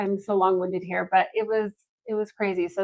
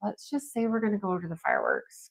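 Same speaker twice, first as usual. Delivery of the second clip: hushed, very quiet whispered aside; 11 dB quieter than usual. Retelling what was said to a husband at a barbecue: imitating a whisper. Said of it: "whispered to my husband".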